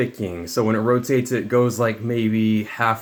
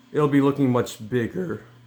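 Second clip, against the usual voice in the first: voice breaking and cracking mid-sentence; 3 semitones higher than usual. Wrapping up a build video for viewers, voice cracking. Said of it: "Voice crack".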